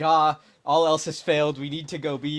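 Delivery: put-on, very loud, frantic, desperate yell. Retelling own earlier call that the team would go B: imitating own desperate tone. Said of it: "I said it in very desperate tone".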